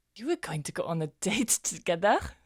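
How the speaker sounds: loud, astonished, caught-off-guard tone. Hearing that another character planned a date, a character reacts, surprised. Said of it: "Why do you sound so surprised?".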